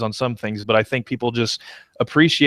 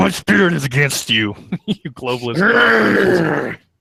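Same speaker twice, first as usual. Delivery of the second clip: snarled growl, close on the mic, pitched up; 6 semitones higher, 4 dB louder than usual. Imitating a show host's rant into the mic, imitating a growl. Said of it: "he like growls like".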